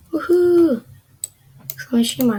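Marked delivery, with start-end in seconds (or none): 0.1-0.8 high, excited cheering woohoo. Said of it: "I'm excited".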